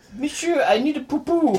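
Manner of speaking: put-on very high little-dog voice with French accent. Voicing the thoughts of a French poodle: French-accented poodle voice. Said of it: "a French accent".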